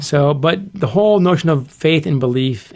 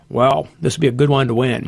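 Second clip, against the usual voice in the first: glum, low-energy voice, no excitement. Recalling his quiet math department chairman mentor, speaker quotes him in an Eeyore kind of voice. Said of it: "in his Eeyore kind of voice".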